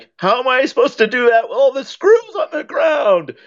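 play-acted yelling voice, very high pitch. Recalling a man building a play set for his kids, the speaker retells his yell. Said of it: "he was like yelling at".

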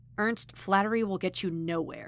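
ordinary delivery, nothing marked

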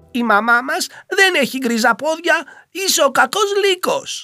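answering loudly. A narrator reads the young ones answering the wolf at the door, answering loudly. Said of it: "απάντησε δυνατά".

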